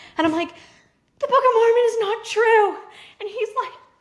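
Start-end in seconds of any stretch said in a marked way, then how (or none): 0.5-2.8 put-on screaming, higher and louder. Retelling telling a spouse through the bathroom door, imitating own past scream. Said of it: "screaming it".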